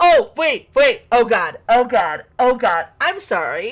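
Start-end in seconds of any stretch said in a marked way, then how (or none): 0.0-2.9 alarmed, slow, drawn-out dawning panic. Searching a game for a missing package: panicking. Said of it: "I'm panicking about something".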